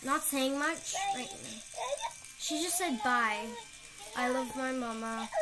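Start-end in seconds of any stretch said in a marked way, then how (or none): none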